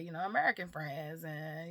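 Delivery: ordinary talk, nothing marked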